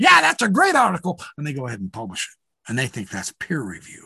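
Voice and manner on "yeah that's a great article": put-on shrill, very high, loud cackling. Retelling how a reviewer answered an article: imitating John Gee cackling. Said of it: "laughs and cackles and says".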